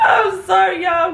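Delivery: high, loud, helpless laughing while speaking. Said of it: "I'm sorry that I keep laughing".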